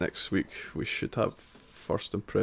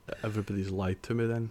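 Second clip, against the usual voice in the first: plain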